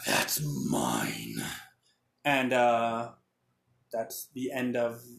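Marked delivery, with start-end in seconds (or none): 0.1-1.3 very deep, low, gravelly, rough snarl. Voicing a big guy who looks back at her: snarling. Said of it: "he snarls at her and goes".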